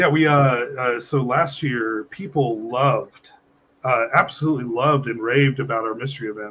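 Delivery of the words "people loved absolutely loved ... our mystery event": heavy, dripping, plainly insincere sarcasm. Recalling how athletes reacted to last year's mystery event: very sarcastic. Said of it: "which I'm being very sarcastic".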